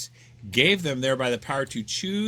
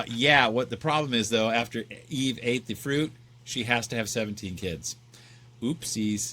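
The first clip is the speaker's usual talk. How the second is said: plain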